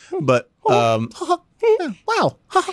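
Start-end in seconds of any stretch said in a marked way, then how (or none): 1.1-2.7 very high pitch with a slow bouncing rhythm. Showing an old impression during a talk about impressions: Mickey Mouse voice. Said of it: "I used to do a good Mickey Mouse".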